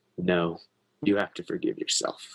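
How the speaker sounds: very fatherly, paternal tone. Retelling what a voice answered in reply: imitating a fatherly voice. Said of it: "came in very fatherly".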